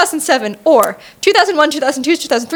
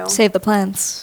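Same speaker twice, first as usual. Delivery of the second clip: villain voice, much lower pitch; 7 semitones lower, 4 dB quieter than usual. Trading villain catchphrases with a partner, in a Poison Ivy voice. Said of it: "I was trying to do a poison ivy one".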